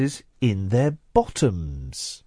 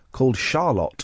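Charlotte pronounced in a posh way. Reading out a listener's name: posh pronunciation of Charlotte. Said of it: "Why are you saying Charlotte like that now?".

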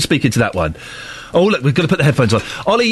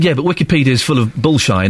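ordinary delivery

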